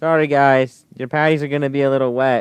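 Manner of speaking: mock little kid voice, small and childlike. Retelling what the kids said walking into the house, in little kid voices. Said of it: "in our little voices".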